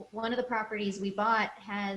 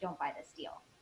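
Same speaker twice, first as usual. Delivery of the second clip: quiet, breathy, confidential whisper; 4 semitones lower, 9 dB quieter than usual. Mid-tour of a property, retelling a man's warning to the group: retelling a whisper. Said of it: "he whispers to us".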